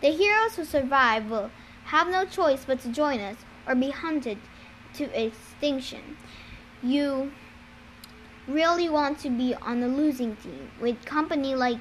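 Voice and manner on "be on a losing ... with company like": ordinary delivery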